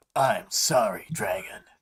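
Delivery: low, growling, mechanical robot voice. Reading Defiant's line to Dragon in a story, growly Defiant voice. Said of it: "me doing growly defiant voice is supposed to stand in for him being robot".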